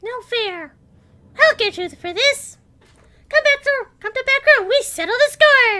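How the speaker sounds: shrill, very high, very loud kobold creature shriek. Voicing a kobold just found in the final room, high-pitched kobold voice. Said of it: "they sound only slightly like what I just sounded there".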